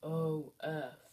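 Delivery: pretend giant voice. Leading a spelling drill, saying the letters again: giant voice. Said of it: "Say it in a giant voice".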